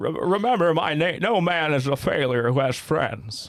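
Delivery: stumbling start, then drawn out slowly. Quoting a line from It's a Wonderful Life after being asked: Jimmy Stewart voice. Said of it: "it's too old, Jimmy Stewart".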